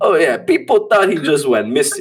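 put-on Italian-accented speech. Retelling a character's reply in a movie scene, in an Italian accent. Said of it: "The Italian accent you're doing here".

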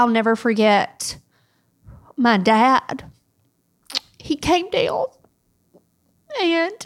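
slow voice, fighting back tears. Speaker remembering their dad, trying to get through it without crying. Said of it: "I'll try my best to say it without crying".

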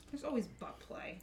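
sounding thoroughly grossed out and disgusted. Adding a remark to the others: disgusted tone. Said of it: "You have to sound so disgusted".

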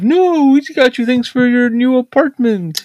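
very high, all-defensive tone. Retelling how she answered the oldest daughter's complaint, imitating a defensive reply. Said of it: "she goes like all defensive".

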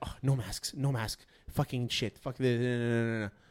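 muttering under breath. Retelling what a woman muttered after she turned around, mumbling under her breath. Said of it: "she starts like mumbling under her breath".

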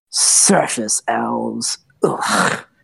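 contemptuous, disdainful sneering voice. Voicing a drow who turns to an elf: sneering at surface elves.

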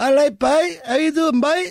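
clumsy Cork accent, pitched way up. Asking listeners about accent discrimination, attempting a bad cork accent. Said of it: "That's my best Cork accent".

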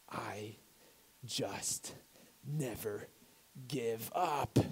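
put-on muttering, very quiet. A parent retells what their six-year-old daughter said, imitating her words under her breath. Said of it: "she just said under her breath".

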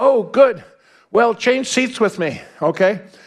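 put-on broken English. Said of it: "says in broken English".

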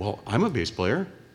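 put-on Canadian accent. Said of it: "this strange fellow comes up with a Canadian accent".

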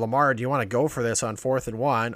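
usual speaking voice

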